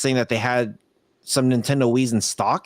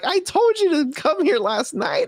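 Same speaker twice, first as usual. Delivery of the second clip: put-on very high, sobbing tantrum yell. Retelling a boy who yelled at a woman while crying, imitating a crying kid yelling. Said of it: "He was like".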